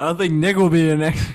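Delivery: put-on voice, volume jumping way up, loud. Imitating another speaker who keeps going loud: imitating someone going loud. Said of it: "You, you keep going loud".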